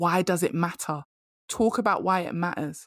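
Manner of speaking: ordinary talk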